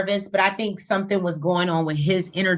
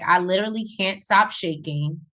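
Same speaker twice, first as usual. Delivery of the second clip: plain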